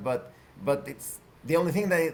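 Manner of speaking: ordinary delivery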